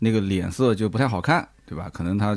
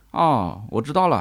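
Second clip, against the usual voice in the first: put-on snide, sarcastic, passive-aggressive tone. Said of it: "语气就有一点阴阳怪气".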